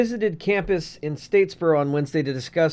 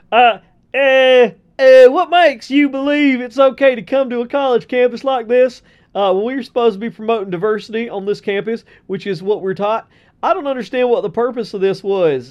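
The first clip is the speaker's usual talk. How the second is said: put-on high, loud Georgia Southern accent. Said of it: "my best Georgia Southern voice".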